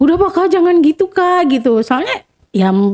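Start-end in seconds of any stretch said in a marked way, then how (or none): 0.0-1.5 acted voice on the verge of tears. Retelling a younger sibling begging them to stop: imitating someone about to cry. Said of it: "adik aku kayak mau nangis".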